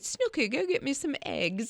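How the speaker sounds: put-on affected upper-class British accent. Retelling grandma giving an order at the grocery store, grandma's put-on british accent. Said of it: "Stop with the accent".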